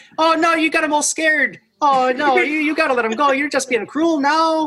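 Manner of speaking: very high, jittery, fretting creature voice. Storyteller voicing the creature up in the tree, to the players holding its friend: nervous tree creature voice. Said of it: "but he's hopping nervously from branch to branch and he's looking down at you guys and he keeps saying".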